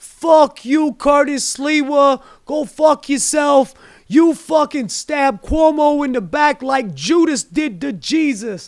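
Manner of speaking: slow, furious, barked-out voice. Imitating an angry Long Island Italian guy after the election: imitating an angry Long Island Italian guy. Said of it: "that angry L-, Long Island Italian guy, it was like".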